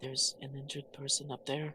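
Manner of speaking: soft, hushed whisper. Whispering to a party member about an injured person nearby: whispering in character. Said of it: "I'd like to whisper to".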